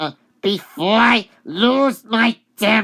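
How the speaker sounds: loud, high-pitched, angry voice.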